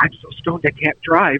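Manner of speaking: hushed, close whisper, right at the ear. Retelling what a friend whispered in the ear after smoking: imitating a whisper. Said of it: "she whispered in my ear".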